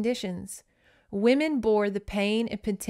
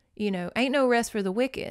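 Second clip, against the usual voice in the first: normal talking voice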